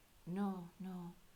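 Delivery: very soft, quiet, hushed murmur. Recounting a chess player's reply about a position: Consuela voice. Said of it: "in his Consuela voice".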